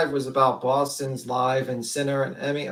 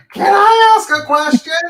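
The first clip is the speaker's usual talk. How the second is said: very loud, high, shrill blaring voice; 13 dB louder than usual. Imitating a woman who always asks to ask a question, in a loud voice. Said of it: "she does it with like this loud voice".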